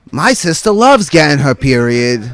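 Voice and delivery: ordinary talk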